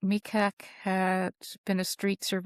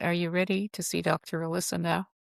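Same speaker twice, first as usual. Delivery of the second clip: normal talking voice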